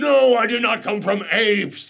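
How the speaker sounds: put-on high, slow, furious, enraged, outraged old-fashioned man voice. Retelling a villain's outburst about evolution, imitating an enraged man. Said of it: "he's so enraged".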